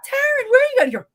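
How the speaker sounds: high, loud, panicked voice.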